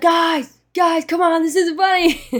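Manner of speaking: loud, high, protesting scream. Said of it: "screaming, like, loud".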